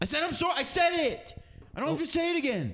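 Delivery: put-on very high, shrill, loud, angry, fed-up teenager voice. Performer plays a teen told to apologize, doing the pissed-off teenager bit. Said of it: "I'm doing the pissed off teenager bit".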